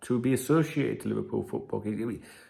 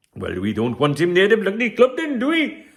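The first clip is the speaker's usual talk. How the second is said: loud, sing-song, botched put-on Welsh accent; 8 semitones higher, 8 dB louder than usual. You say it would have sounded better in Welsh, then try it: Brian Partridge impression, bad Welsh accent. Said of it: "I could have said that in Welsh; it would have sounded much better. Brian Partridge impression".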